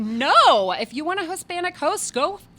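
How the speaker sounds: high, loud, indignant tone. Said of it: "And I was like".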